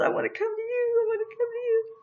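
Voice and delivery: very high, tearful, trembling, crying voice. Retelling a woman's plea to come to the speaker, imitating her crying and shaking. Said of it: "she was crying, and she was shaking".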